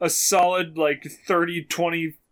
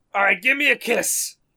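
put-on thick, high older New York accent, called out; 5 semitones higher than usual. Sitting in their car, retelling what an old man kept yelling, retelling a heavy New York yell. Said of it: "heavy, heavy New York accent man yelling".

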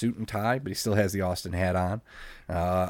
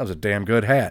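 mock-nonchalant tone, said louder; 5 dB louder than usual. Speaker retelling Vince tossing Austin's hat into the crowd, imitating Austin, mock-nonchalant. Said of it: "Austin so nonchalantly goes".

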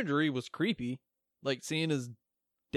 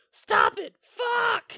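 mock piercing, shrill, swooping scream, very high; 5 dB louder than usual. Speaker recaps a movie scene, imitating Monica Keena's shrill scream. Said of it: "and shrilly".

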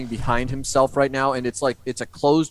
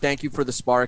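plain

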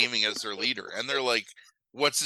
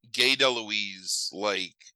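plain

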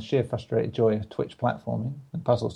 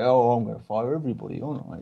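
put-on, lordly, aristocratic tone. Joking about firing everybody, playing the lord of the manor: lord of the manor voice. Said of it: "here I am being Lord of the Manor, who's like".

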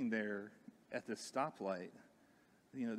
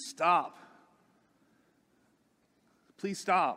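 high, loud yell, calling out; 7 semitones higher, 13 dB louder than usual. Retelling calling across the street to police officers: retelling a yell. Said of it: "I'm yelling across the street".

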